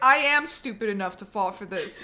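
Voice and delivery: normal talking voice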